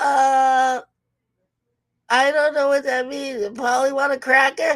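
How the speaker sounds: put-on high childlike voice, stretched opening "uh". Acting out a kid answering the teacher: imitating a kid. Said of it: "And the kid's like".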